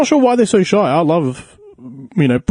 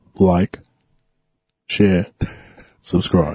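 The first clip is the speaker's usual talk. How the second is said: very deep put-on voice, dropped as low as possible; 8 semitones lower than usual. Trying to copy the other speaker's outro line, trying a put-on deeper voice. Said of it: "I'm gonna try and go deeper".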